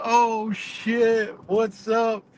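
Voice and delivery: very slow, high, drawn-out, acted-out laughing voice. Retelling how a man finally recognized the speaker: imitating someone laughing while talking. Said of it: "like the laugh".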